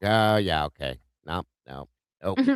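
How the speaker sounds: play-acted, swooping, sing-song delivery. Retelling how someone in the back smirked at a remark: imitating Dave smirking. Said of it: "Dave in the back kinda smirked on that one".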